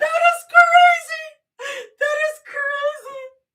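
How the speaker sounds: talking through laughter. Reacting to a site going down repeatedly, laughing while talking. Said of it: "I shouldn't be laughing".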